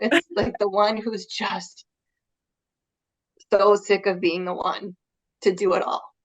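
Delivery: emotional, choked-up voice close to tears. Describing the woman who can be helped most, tearing up. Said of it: "look at I'm tearing up".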